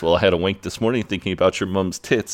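ordinary talk

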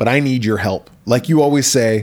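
ordinary talk

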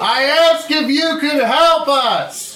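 yelling. Repeating a question to an old janitor who keeps saying what, yelling. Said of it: "you don't have to yell".

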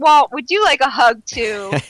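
high, really sarcastic tone.

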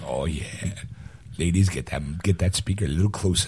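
put-on bass voice. A podcast co-host opens the episode, working the bass in his voice. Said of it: "I'm working the bass in my voice".

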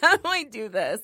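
helpless, flustered outburst. Retelling own reaction when flustered: imitating being flustered. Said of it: "if I'm flustered".

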